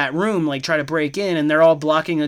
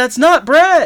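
very high-pitched, loud yell; 11 semitones higher, 8 dB louder than usual. Retelling a movie scene where a woman keeps objecting: imitating someone yelling. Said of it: "starts yelling".

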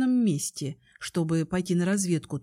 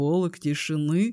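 mocking, echoing; 2 semitones lower than usual. Kai answers Mari by repeating her words as a question, mockingly. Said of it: "насмешливо переспросил Кай".

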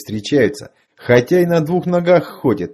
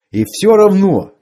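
agitated, restless, pitched-up insistence; 6 semitones higher, 4 dB louder than usual. The weapons specialist keeps protesting to the others around him, agitated. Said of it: "все никак не мог успокоиться".

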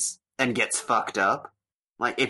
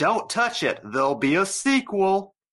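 mock raised, pitched-up shout, as if offscreen; 8 semitones higher than usual. Retelling the mom's off-screen line in the silly cut: imitating a shout. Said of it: "the mom shouts from off screen".

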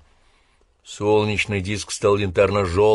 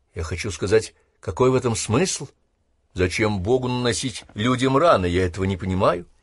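ordinary delivery

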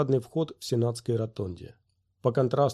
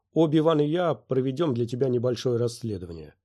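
usual speaking voice

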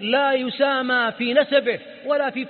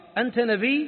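ordinary talk

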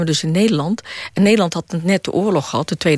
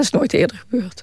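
getting emotional, moved, higher pitch; 3 semitones higher than usual. Filmmaker recalling the standing ovation at her documentary's premiere, getting emotional. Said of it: "Sorry, ik word emotioneel".

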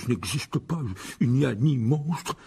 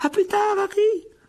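small, very high-pitched calling voice; 4 dB louder than usual. Swept off by a crowd of students, Colin calls back to Harry in a small high-pitched voice. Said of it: "d'une petite voix aiguë".

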